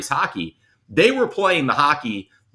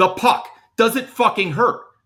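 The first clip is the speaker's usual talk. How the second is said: very high-pitched screaming, acted out; 11 semitones higher than usual. Retelling a coach at practice questioning a goalie: imitating a coach screaming. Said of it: "he screams at Weeksy".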